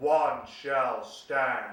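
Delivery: grand, deep robot leader voice, each word weighted. Showing a child how to say the line: Optimus Prime voice. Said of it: "pretend to be Optimus Prime".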